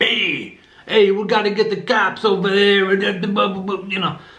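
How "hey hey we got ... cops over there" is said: mocking overdone New York accent, higher pitch. Mocking how people in a movie overdid the accent: imitating an exaggerated New York accent. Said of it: "the New York accent was laid on super thick".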